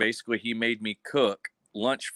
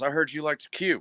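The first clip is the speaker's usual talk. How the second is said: put-on thick, heavy, fast, rushed Cajun accent; 6 semitones higher than usual. The speaker quotes a First Sergeant who came up to them, in a thick, fast Cajun accent. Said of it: "in his insanely thick coon ass accent".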